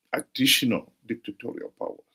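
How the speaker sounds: additional stressed hard with a rising pitch.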